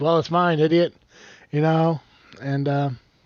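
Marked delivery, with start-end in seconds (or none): none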